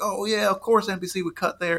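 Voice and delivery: exaggerated high Southern accent. Describing how NASCAR fans reacted to NBC's commercial breaks, in a stereotypical Southern accent. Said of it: "Sorry, I did the accent".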